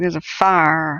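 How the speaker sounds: Southern US drawl, fire drawn out as farr. Showing how people in the Deep South say fire, deep Southern US accent. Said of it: "the deep South is like".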